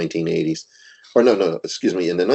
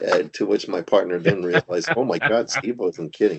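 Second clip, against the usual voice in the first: ordinary delivery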